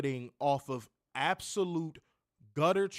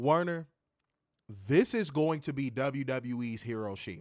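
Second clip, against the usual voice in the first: weighty, slow, deliberate declaration, one word stretched out; 3 semitones lower than usual. Addressing Werner and the listeners after asking them to listen closely, speaking slowly. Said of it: "I'm going to say this slowly".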